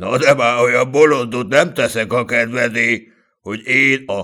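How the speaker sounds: plain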